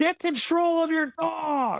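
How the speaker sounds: screaming, pitched very high. Retelling a lady who screamed at him while he played ball with his dog, retelling a woman's scream.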